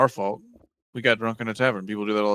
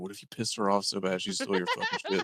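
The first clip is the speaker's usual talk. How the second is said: soft, hushed, whispered aside; 3 semitones lower, 9 dB quieter than usual. Whispering to Ganelon in character while walking down the halls: whispering. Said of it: "I whisper to the Ganelon".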